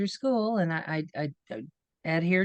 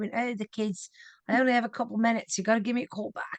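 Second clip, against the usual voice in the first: high-pitched put-on British accent; 5 semitones higher than usual. Recalling calls to radio stations as an invented mother, in a put-on british accent. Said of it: "had I had an accent".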